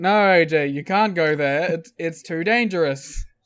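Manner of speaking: mock, very slow, drawn-out, passive-aggressive tone. Retelling two people warning someone not to go: imitating a passive-aggressive tone. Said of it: "passive aggressively".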